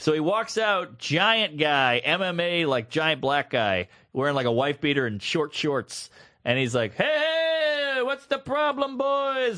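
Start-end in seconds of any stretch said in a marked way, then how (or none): 6.9-9.6 very high, put-on Jamaican accent, drawn-out hey. Retelling what a huge guy said walking out: imitating a Jamaican accent. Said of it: "He's Jamaican all of a sudden".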